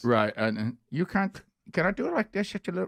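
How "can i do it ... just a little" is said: fake Indian accent with Irish touch, higher. Asking the others if this accent is okay: put-on Indian accent with Irish touch. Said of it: "but it's got a touch of Irish".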